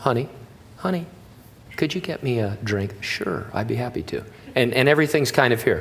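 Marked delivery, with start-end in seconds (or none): 0.0-4.2 gentle, soft-spoken, quieter and lower. Showing how people from a soft culture talk at home, soft, not raising voice. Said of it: "You don't raise your voice at home".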